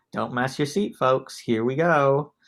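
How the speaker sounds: put-on Southern US accent, laid on thick. Describing the show intro, the speaker imitates the expert's line: Cassie's Southern accent. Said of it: "in her wonderful Southern accent".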